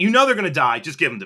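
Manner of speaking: acted, mock-angry, pissed tone. Retelling what they said to a seated seller, retelling an angry demand. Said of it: "I was just pissed at the whole situation".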